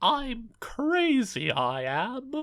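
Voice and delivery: very high-pitched sing-song, swooping, every word dragged out. Voicing the Joker in a comedy bit: Joker voice. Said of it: "as the Joker would say".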